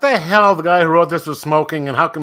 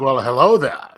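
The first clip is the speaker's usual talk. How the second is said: put-on calm wizard voice, lower; 3 semitones lower than usual. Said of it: "You gotta do that in Ben Kenobi style".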